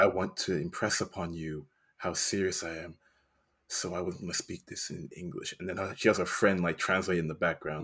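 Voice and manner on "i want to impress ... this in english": calm, quiet, low-key speech. Acting out O-Ren Ishii's speech from the film: imitating O-Ren Ishii speaking calmly. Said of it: "talks very calmly".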